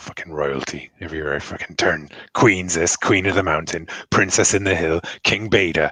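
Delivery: muttering quietly under breath. Blackwin comes back to the group: muttering under breath. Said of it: "just muttering under his breath".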